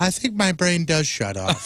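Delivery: most earnest, sincere, sorrowful tone. Retelling what he said after the camera was turned off, imitating a sincere, sad voice. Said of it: "with the most sincere, sad voice".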